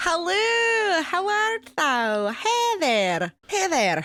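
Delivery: put-on Manchester accent, very high, hello stretched. Greeting listeners at the start of the show, in a manchester accent. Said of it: "I have to have a Manchester, England accent".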